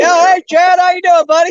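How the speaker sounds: shrill, loud, high hollered yell. Calling out a greeting to a distant buddy: yelling across the water. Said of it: "I'm yelling at you".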